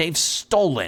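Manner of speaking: hissed words. A woman hisses her line, then turns to bark at Rollo, hissing. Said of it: "she hisses".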